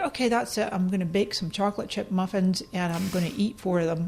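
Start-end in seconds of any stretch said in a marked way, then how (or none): none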